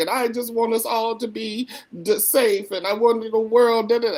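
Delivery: mock weeping crying voice. Retelling how a colleague wept in a training: imitating someone weeping. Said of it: "She starts weeping and she starts crying".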